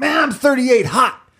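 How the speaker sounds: very high, fuming voice. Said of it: "he was really mad one time, and he goes".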